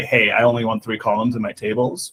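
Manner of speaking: plain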